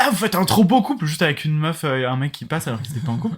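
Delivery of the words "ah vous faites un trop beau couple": mock shouting, much higher, louder. Retelling how a drunk man yelled at passersby, retelling a shout. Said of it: "il leur criait dessus et tout".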